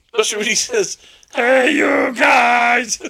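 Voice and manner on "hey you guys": raspy, rough wild-puppet yell, "guys" stretched out. Imitating a movie character who sounds like Animal from the Muppets. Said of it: "he sounds like Animal from the Muppets".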